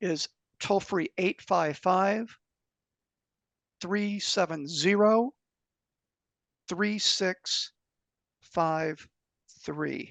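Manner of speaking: very slow, deliberate, one digit at a time. Giving out a customer service phone number to Kim and listeners; speaking slowly. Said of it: "I'll say it slowly".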